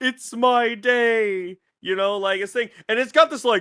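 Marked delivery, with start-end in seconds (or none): 0.0-1.6 grotesque voice with the word "day" drawn out. Retelling a film's grotesque creature speaking: Sloth from Goonies voice. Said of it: "fucking sloth from Goonies voice".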